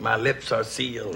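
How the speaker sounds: low, slow, hushed and solemn voice.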